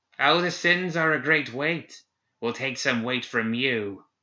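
put-on wicked cackling old hag voice. A narrator reads a spirit shaped like an old woman speaking, with a soft cackle. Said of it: "She cackled softly as she walked".

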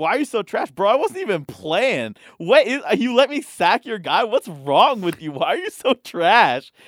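loud, high, berating, taunting narrator voice. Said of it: "He goes".

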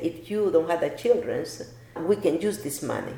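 ordinary delivery

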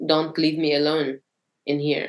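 put-on tearful crying voice. Retelling a mother's phone call the next day: imitating someone crying. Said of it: "my mother calling me and crying".

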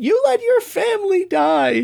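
very high, acted-out taunting tone, making light. Quoting how he says his little red notes: retelling a mocking line. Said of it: "the way he says it is him like mocking the emotion".

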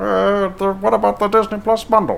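put-on puppet character voice. Doing the voice again when a co-host asks: Muppet-like character voice. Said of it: "Do that voice again".

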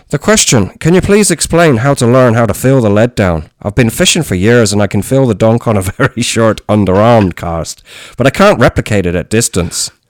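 fake Irish accent, laid on thick. Reading a listener's question aloud, put-on irish accent. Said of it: "should I do it in the accent?".

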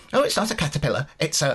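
put-on huffy, stroppy, squeaky little child voice, said sharply. Retelling a kid arguing with his dad, imitating stroppy kid, squeaky voice. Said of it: "gets really fucking stroppy with him in his squeaky, bloody voice".

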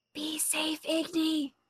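loud, high-pitched stage whisper. Playing their character, the player says goodbye before closing the window, in a loud whisper. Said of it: "I'm going to loudly whisper".

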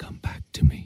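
imitated pleading tone. Recalling holding a loved one who died: retelling a plea. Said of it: "pleading with her to come back to me".

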